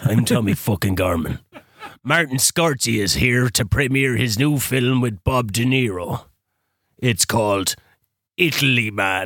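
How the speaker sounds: very slow newsreader delivery, read like headlines. Doing a voice of the guy who used to do the news: Tommy Garman voice. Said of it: "that was the voice that you had".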